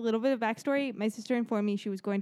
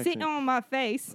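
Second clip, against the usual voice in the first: put-on country-style accent; 3 semitones higher than usual. Reading a title aloud after being asked for a country accent, in a country accent. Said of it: "Country accent".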